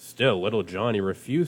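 ordinary delivery, nothing marked

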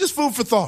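light, breezy, tossed-off aside.

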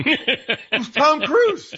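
slow, drawn-out, laughing disbelief.

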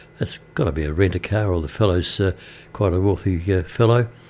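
ordinary delivery

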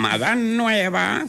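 slow, high-pitched parrot voice.

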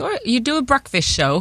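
bad put-on Australian accent. Radio host quoting how people reacted to their breakfast show: terrible Australian accent. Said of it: "It's a terrible Australian accent".

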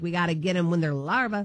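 ordinary talk

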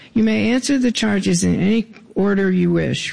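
normal talking voice

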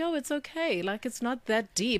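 acted soothing voice. Retelling calming a stressed man about a small thing, in their most soothing voice. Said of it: "I said in the most soothing voice".

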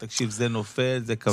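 ordinary delivery

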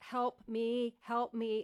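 acted, slow, drawn-out, mildly panicked desperate cry. Retelling being stuck on the ride with friends listening, reenacting a scream for help. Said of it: "I was screaming like for my life".

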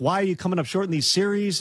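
plain

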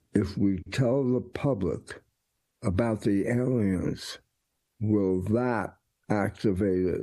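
ordinary talk

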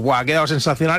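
ordinary talk

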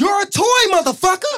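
very loud, high-pitched, barked shout. Doing an impression of an actor in a movie scene: Samuel L. Jackson voice. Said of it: "This is Samuel L. Jackson in Toy Story".

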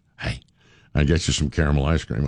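put-on whisper. Retelling how the wife offers snacks: imitating wife whispering. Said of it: "she'll just kinda whisper".

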